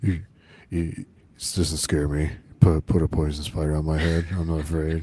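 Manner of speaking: mock droning, dumb-sounding voice. Imitating a character trying to be tough, droning dumb voice. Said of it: "droning, like, dumb voice that he does".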